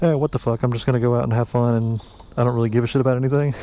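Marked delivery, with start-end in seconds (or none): none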